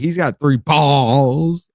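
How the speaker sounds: leaning hard on the word balls. Describing how they kept emphasizing the word: heavy stress on balls. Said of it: "they would emphasize emphasize the word".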